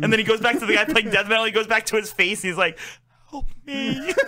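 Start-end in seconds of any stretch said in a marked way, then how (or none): 3.3-4.1 fake tearful crying, crocodile-tear pleading tone. Retelling a video where a fighter with fake tears begs: imitating a fake crying plea. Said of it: "fake tears on his face".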